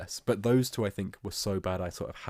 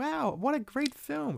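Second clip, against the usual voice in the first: put-on cartoon girl voice, higher pitch. Retelling a Simpsons tie-in video where Lisa leaves the cinema: Lisa Simpson voice. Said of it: "Lisa was going like".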